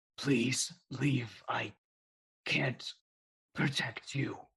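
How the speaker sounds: hurting, halting voice. A narrator voices a voice heard as the halls quake, in a pained voice. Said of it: "hear this pained voice".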